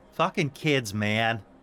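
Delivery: put-on New Jersey accent appearing suddenly. Voicing a character who suddenly speaks with a New Jersey accent. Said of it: "The voice comes out of his mouth is very, like, New Jersey".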